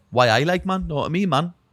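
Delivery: put-on loud, high Newcastle Geordie accent, lad-style. Describing UK accents, showing how people from Newcastle talk: Geordie accent. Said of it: "Like Geordies, people from Newcastle".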